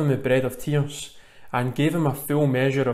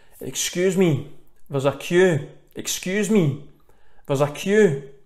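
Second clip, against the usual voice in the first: harshest, cutting, slow tone; 4 semitones higher than usual. Retelling a younger man in a chip shop queue: imitating a harsh tone. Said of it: "saying the harshest of tones".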